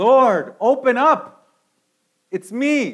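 desperate, full-voiced, loud, very slow, drawn-out yell. Acting out someone locked out of heaven, yelling at the top of your voice. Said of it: "yelling at the top of your voice".

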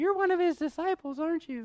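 put-on very high, small, girlish little girl voice. Retelling the Bible story, voicing the servant girl questioning Peter in a little girl voice. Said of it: "That's my little girl voice".

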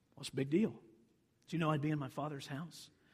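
put-on calm delivery. Speaker retells how Jesus answered Joseph and Mary, retelling his words calmly. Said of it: "he says very calmly".

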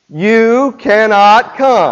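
firm, rule-setting parent voice. Leading a group through a verse, saying it like a parent telling children. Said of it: "say it like you're a parent telling your children".

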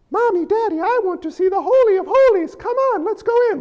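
put-on very high, squeaky small-child voice. Speaker acts out kids at the temple asking their parents, in a Mickey Mouse kid voice. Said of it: "Little kids talk like Mickey Mouse".

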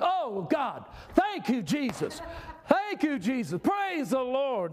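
rejoicing, light sing-song holler, high and swooping. Retelling a man dancing in his office, praising God: imitating someone shouting. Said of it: "he starts shouting".

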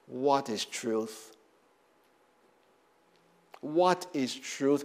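slow, scornful, dismissive, disdainful tone, acted. Acting out Pilate's reply to Jesus: imitating a disdainful Pilate. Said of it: "can you hear how disdainful he's".

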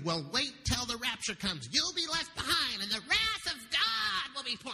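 acted, high, swooping witchy preacher-style yelling. Retelling a street preacher yelling at a lady: imitating someone yelling. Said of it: "she started yelling at this lady".

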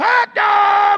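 obnoxious, raspy, very high and very loud vendor shout. Speaker imitates a hot dog vendor at a Ranger game, raspy obnoxious vendor shout. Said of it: "It's that raspy, that irritating, almost obnoxious kind of sound".

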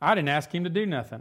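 put-on dismissive, dripping sarcasm in a little-kid voice. Retelling a four-year-old's reply to being told to say thanks: imitating a sarcastic child. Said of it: "in the sarcastic tone that he's learned from his dad".

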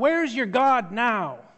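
yelling out. Retelling a story of one voice in a silent crowd: retelling a yell. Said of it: "a single voice that just yelled out".

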